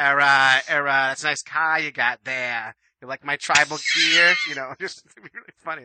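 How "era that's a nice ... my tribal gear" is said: put-on slow, drawling, upper-crust Boston accent. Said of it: "They all talk like the Kennedys".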